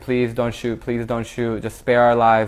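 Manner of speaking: normal talking voice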